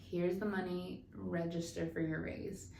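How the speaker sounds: ordinary delivery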